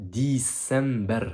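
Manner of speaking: "December" said slowly, stretched.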